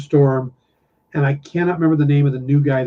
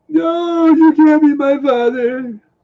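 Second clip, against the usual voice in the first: mocking whiny cry, higher; 12 semitones higher, 4 dB louder than usual. Imitating whiny Luke from the films: whiny no. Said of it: "He is kind of a whiny no".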